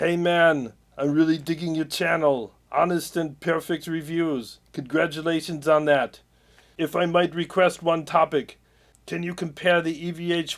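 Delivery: put-on Austrian accent, action-star voice. Reading a comment on his channel aloud in Arnold voice. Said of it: "I'm going to read it in the voice of Arnold".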